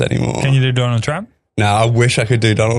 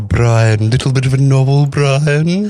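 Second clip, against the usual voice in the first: put-on cartoon baby voice; 3 semitones higher than usual. Showing the impressions he used to do, a Stewie Griffin impression. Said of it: "that was Stewie Griffin".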